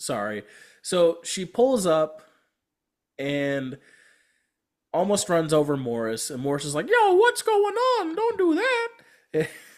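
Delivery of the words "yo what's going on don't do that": squeaky voice, pitched way up. Retelling a movie scene where a character nearly gets run over, in Mickey Mouse voice. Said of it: "best Mickey Mouse voice".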